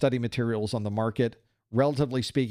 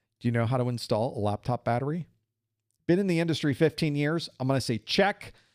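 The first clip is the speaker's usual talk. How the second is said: ordinary talk, nothing marked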